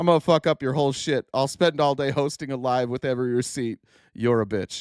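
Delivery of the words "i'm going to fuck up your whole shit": ordinary delivery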